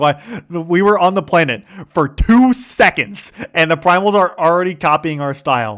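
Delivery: genuinely upset, loud, high, seething indignant rant. Retelling a game character's angry complaint: imitating an angry seething character. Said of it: "he's just seething".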